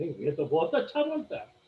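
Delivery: low, lilting, impressed murmur.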